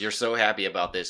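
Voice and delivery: normal talking voice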